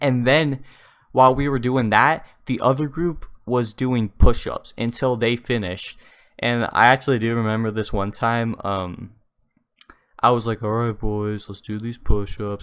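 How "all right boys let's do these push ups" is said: gloomy, joyless, most depressing voice possible. Retelling own past words before push-ups: imitating own depressing voice. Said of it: "in the most depressing voice I could manifest".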